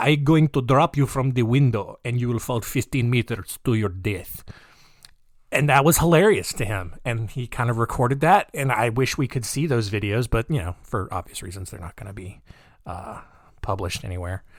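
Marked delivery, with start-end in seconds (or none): 0.0-4.4 rough, approximate put-on Russian accent. Retelling a man threatening a boy he held upside down, in an almost-Russian accent. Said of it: "That's almost Russian".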